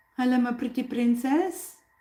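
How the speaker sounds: purring cat voice. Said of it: "a purring cat voice".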